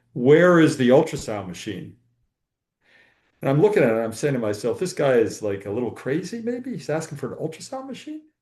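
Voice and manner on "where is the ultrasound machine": loud, stern, commanding put-on German accent. Retelling what a man training in the United States asked, in a German authority voice. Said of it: "in this uh, German authority voice".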